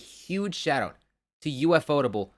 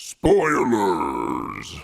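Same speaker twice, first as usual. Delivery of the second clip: very low, loud, swooping booming delivery; 8 semitones lower, 5 dB louder than usual. Saying a warning after being asked for a specific voice: Shenron voice. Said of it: "You gotta do it in the Shenron voice".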